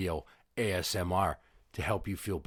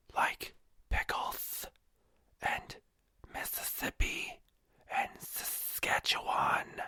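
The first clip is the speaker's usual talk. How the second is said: slow, hushed, breathy whisper. Doing a mock ASMR video for listeners, whispering. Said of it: "let's whisper some words".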